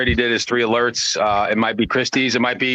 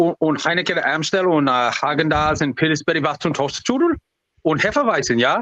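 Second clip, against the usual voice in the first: rattled babbling in a fake German accent; 4 semitones higher than usual. Retelling what was said at a toll booth: retelling fake german talk. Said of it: "I spoke fake German".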